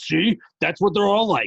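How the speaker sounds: very high, loud, shrill, blaring demon voice. Joking with a cohost, voicing what the demons say: demon voice. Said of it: "I like your demon voice though".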